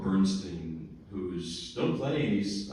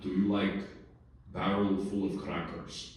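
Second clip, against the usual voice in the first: put-on low Russian accent. A Russian teacher asks his student a question while being driven, in Vladimir Viardo's low Russian voice. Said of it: "in his low Russian voice".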